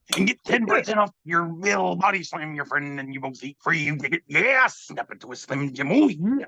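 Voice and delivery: wrestling promo announcer voice. Reading a meme sign aloud: Macho Man Randy Savage voice. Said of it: "I will now read the rest of this in that voice".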